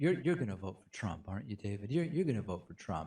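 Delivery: hushed, close-up half-whisper. Retelling what a man half-whispered into his ear: imitating someone half-whispering. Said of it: "whispering into my ear".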